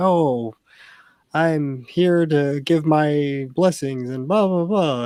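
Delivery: high-pitched, very slow, drawn-out voice. Retelling how an emissary in the episode spoke: imitating a high-pitched voice. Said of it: "he's got this high-pitched voice".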